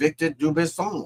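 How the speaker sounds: put-on French accent. Saying a man's name aloud, in a french accent. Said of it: "That's my French accent".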